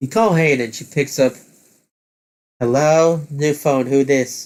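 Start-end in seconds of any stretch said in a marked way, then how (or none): 2.6-4.5 put-on Canadian accent. You call Hane on the phone and she picks up: Hane's fake accent. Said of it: "faking an accent".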